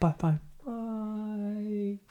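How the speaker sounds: soft fading drawn-out words. Showing how repeated byes go at the end: each bye quieter. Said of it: "like they get quieter".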